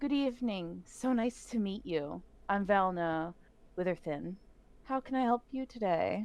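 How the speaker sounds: smiling while speaking, warm smiling tone. Game master voices a character greeting the players at a table, smiling while speaking. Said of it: "then she just smiles and she goes".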